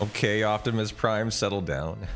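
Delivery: normal talking voice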